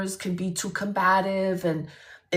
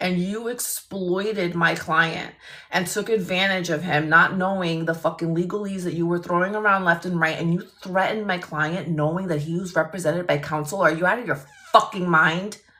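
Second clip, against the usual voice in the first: plain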